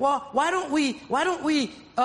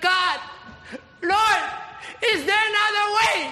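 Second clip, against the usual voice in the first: put-on high, pleading, begging voice; 7 semitones higher than usual. Telling listeners how Jesus prayed, acting out Jesus begging. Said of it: "And he's begging".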